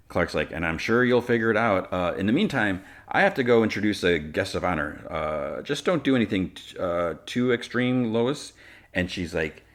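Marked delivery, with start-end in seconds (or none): none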